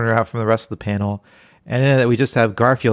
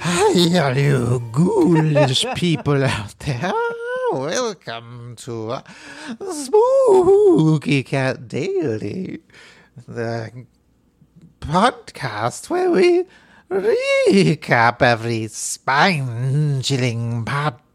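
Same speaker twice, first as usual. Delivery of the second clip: put-on ghoulish host voice, higher; 4 semitones higher than usual. Opening the podcast in character as a spooky host: Crypt Keeper voice. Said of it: "My name is the Crypt Keeper".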